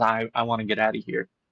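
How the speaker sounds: ordinary delivery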